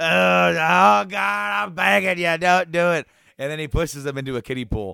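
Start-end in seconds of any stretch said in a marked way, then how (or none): 0.0-3.1 very loud, drawn-out, pleading begging tone. Retelling a wrestling scene, imitating Steve Austin begging not to be thrown: imitating Austin begging. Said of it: "begging him".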